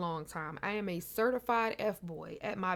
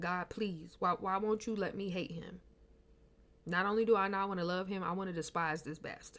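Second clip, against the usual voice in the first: put-on crying voice, tearful and weeping; 3 dB quieter than usual. Retelling how she prayed to God about a man, imitating her past crying prayer.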